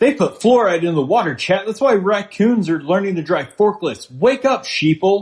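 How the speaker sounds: very high-pitched, shrill shouting. Ranting about fluoride and raccoons to the chat: yelling. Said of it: "Please stop yelling".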